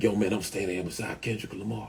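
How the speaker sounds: put-on whisper. Retelling a phone call from a nephew: imitating someone whispering. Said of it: "why is you whispering".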